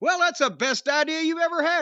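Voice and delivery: mock yelling, very high pitched. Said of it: "I'm yelling at him saying".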